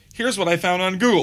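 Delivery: very high, snippy voice with attitude, acted out. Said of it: "she copped an attitude?".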